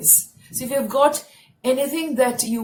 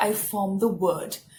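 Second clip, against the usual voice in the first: usual speaking voice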